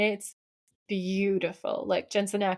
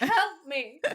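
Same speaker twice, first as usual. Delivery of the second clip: mock helpless, pleading tone; 7 semitones higher than usual. Retelling how a woman called out to the police, mock-helpless plea. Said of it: "she's playing so helpless".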